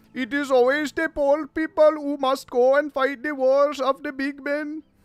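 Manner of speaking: very high-pitched, loud, put-on Indian accent. Reading out another person's post to mock it: mock Indian accent. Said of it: "you literally sound like one of those Indian accounts".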